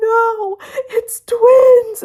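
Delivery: put-on tearful voice. Retelling telling office coworkers about twins: retelling own crying words. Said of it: "And I'm crying".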